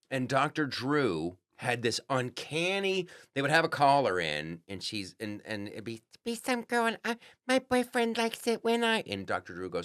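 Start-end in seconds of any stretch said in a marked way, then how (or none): 7.4-9.0 mock little-baby voice, higher pitch. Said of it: "some girl using a little baby voice".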